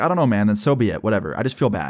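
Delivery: ordinary talk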